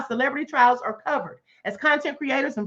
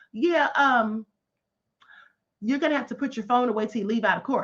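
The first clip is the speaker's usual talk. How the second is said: mock courteous, friendly, polite tone; 3 semitones lower than usual. Retelling what a court marshal said to a man in the courtroom, mimicking a nice polite voice. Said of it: "He said it in a nice voice".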